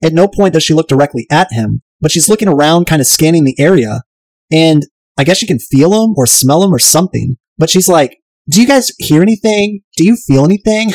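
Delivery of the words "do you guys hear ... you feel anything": put-on high-pitched girly woman's voice. Recapping an episode, voicing a woman who senses someone nearby: Dane Cook female impersonation. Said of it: "my Dane Cook female impersonation".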